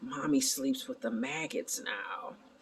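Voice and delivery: eerie, creepy, hushed, whispered possessed voice. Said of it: "it's so creepy".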